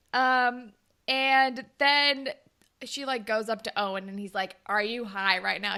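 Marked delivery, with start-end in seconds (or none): 4.6-5.8 put-on judgy, disapproving tone. Retelling how a guy reacted when she came up to him, acting out a judgy question. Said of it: "He's like very like judgy".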